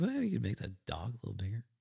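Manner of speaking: hushed, very quiet, soft voice. Retelling what Harry said to the speaker, in his very quiet Harry voice. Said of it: "in his very quiet Harry voice".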